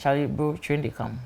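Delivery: put-on, very calm, easy, unbothered tone. Retelling a man's warning about a train, imitating a very calm tone. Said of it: "he's saying train they come in a very calm tone".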